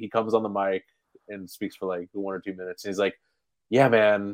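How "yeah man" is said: usual speaking voice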